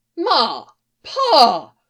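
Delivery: shocked, scandalized tone. A grown son calls to his parents, very scandalized. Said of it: "sounded very scandalized".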